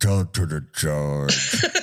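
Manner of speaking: very low, deep, mumbled grumble. Retelling an odd conversation between two people, imitating the man mumbling. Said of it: "he mumbles like".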